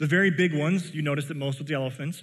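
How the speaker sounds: plain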